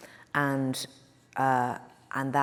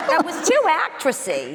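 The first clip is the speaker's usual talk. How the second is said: high, loud, shrill, sing-song swooping voice; 8 dB louder than usual. Retelling the worst note a director gave: imitating the director's voice. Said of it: "listen to the voice".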